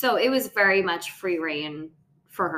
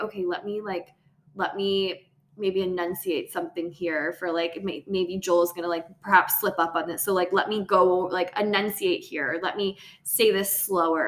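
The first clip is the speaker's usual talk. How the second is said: ordinary talk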